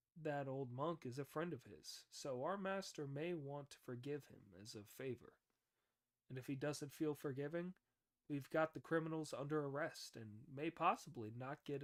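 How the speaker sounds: ordinary delivery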